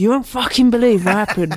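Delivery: put-on seething, fuming outburst. Imagining a friend telling a partner about a refused package: imitating a friend fuming. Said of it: "I left fuming".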